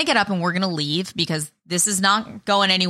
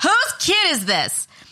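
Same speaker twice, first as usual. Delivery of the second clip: slow, high, drawn-out yell, called out loudly; 10 semitones higher than usual. Retelling a woman picking up a wailing kid, retelling a yell. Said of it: "she starts yelling".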